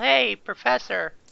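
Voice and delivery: loud call projected across a distance. Calling down a long hall to the professor in character: yelling to someone far off. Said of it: "I'm just gonna yell".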